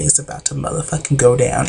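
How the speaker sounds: normal talking voice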